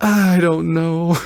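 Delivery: put-on defeated, resigned, totally beaten tone. Teasing the other speaker by imitating them: imitating a defeated voice. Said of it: "You sound so defeated. ... You're like".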